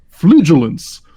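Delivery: loud, bold, confident, full-chested delivery. Saying a card name after an apology, said boldly with my chest. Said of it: "I got to say it with my chest".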